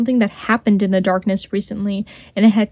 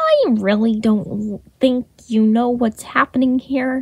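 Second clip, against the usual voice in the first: slow, lazy drawl with stretched vowels; 3 semitones higher than usual. Reading Remus speaking while kicking at the rubble, drawling. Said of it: "Remus drawled".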